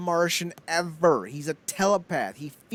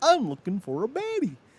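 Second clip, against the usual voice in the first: high cartoon frog voice, talking through a puppet; 5 semitones higher than usual. Retelling what a puppeteer says in online videos: Kermit the Frog voice. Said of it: "he does the Kermit voice".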